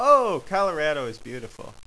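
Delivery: ordinary delivery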